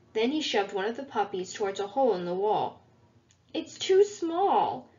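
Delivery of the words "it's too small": high, protesting cry, pushing back. A puppy, shoved toward a hole in the wall by Tibbs, protesting. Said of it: "protested the pup".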